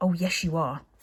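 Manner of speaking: hissing through clenched teeth. Narrator reading a character's retort to another character, hissed through gritted teeth. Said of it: "hissed Thuggery through gritted teeth".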